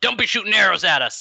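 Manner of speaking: high shout. Describing his character's actions mid-scene, then yelling the character's line. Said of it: "And I yell".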